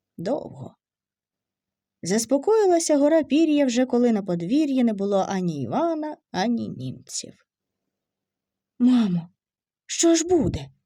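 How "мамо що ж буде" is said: scared, anxious, frightened, pleading voice. Reading Maria asking her mother what will happen: frightened. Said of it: "питала перелякана Марія матір".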